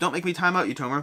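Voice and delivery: ordinary talk, nothing marked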